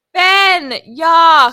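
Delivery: loud, high, disgusted yelling. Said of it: "I hear him go".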